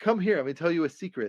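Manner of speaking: secretive, beckoning shaman character voice. Retelling a scene, quoting the monkey shaman: imitating the shaman monkey character. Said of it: "the shaman guy. He says".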